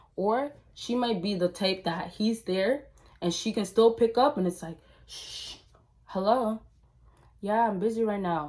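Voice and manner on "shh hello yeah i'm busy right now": put-on suspicious, shady tone. Acting out how a cheating girlfriend picks up the phone: imitating a sketchy phone pickup. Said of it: "she picks it up so sketchy".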